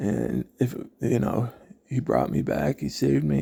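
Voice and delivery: plain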